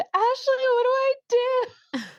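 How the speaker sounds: very high shrieking, overwhelmed scream. Retelling a plea to a doula during labor: retelling a scream. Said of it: "I screamed".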